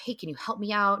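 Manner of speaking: ordinary delivery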